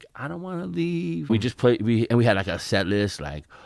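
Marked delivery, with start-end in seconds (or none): 0.2-1.3 put-on very high, weepy, crying little-kid voice. Retelling a childhood memory of leaving music class: imitating own childhood crying. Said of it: "and me crying, like".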